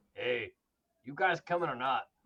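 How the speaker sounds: low, gruff calling voice. Narrating Terry starting up the truck and calling to the group, in Terry's gruff voice. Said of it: "his you know typical gruff voice".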